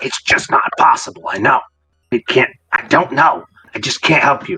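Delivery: low, rough, raspy, gravelly voice. Game master voicing words overheard through a door: low, gravelly voice. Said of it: "a low, gravelly voice".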